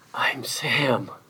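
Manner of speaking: soft, hushed voice. A narrator reads the man's answer to the policeman, quiet voice. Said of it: "said with a quiet voice".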